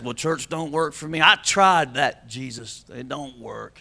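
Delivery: mock complainer's voice, low, soft and whiny.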